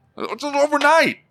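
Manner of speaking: high, mocking bank teller voice.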